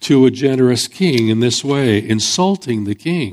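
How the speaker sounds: ordinary delivery, nothing marked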